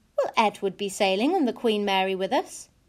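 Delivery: plain reading voice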